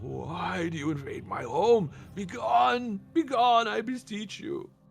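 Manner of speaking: echoing moan. Game narrator voicing a creature, echoing moan. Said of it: "you hear like this echoing moan".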